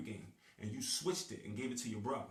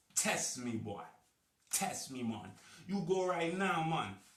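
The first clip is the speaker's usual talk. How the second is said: put-on Jamaican accent, loud and high-pitched; 5 semitones higher, 5 dB louder than usual. Speaker performing a bit, Jamaican accent. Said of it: "That's my Jamaican accent".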